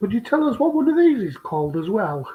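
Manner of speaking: mock-serious sarcasm with swooping pitch. Asking the other speaker to name something, being sarcastic. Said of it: "I'm being sarcastic".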